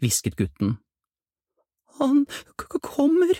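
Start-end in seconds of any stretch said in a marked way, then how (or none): 2.0-3.4 very high, shaky, trembling quaver. Hearing hard footsteps in the park, a girl speaks in a trembling voice. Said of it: "sa en jente med skjelvende stemme".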